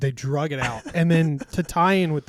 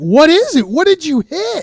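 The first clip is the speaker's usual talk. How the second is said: raised, swooping, scolding yelling; 9 dB louder than usual. Retelling people yelling at the speaker's sister, imitating people yelling. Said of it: "they're yelling at her".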